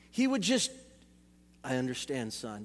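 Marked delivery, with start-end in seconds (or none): 1.6-2.6 calm, level, very low, hushed monotone. Retelling what a calm father said: imitating dad's monotone voice. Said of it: "Very monotone".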